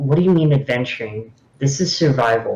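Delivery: unamused, matter-of-fact, dead straight delivery. Turning to another character in a role-play, deadpan. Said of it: "just kind of like deadpan this character and go".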